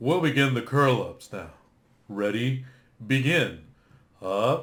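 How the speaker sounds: slow, measured, recorded-style announcer voice. Retelling tricking freshmen during curl-ups: imitating the FitnessGram audio. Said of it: "I actually tricked some freshmen with that".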